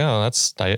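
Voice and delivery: ordinary talk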